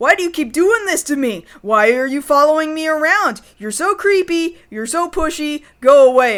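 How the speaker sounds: play-acted, mild yet heated, angry scolding. Retelling how a woman turned on the man she invited: retelling angry yelling. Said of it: "she just starts yelling at him like".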